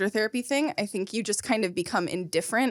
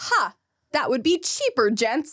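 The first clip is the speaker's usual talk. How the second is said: put-on antique, old-timey, old-fashioned way of speaking; 4 semitones higher than usual. Describing the lines in a filmed scene, giving an example in old-timey speech. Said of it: "kind of old-timey speak".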